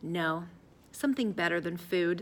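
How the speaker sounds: ordinary delivery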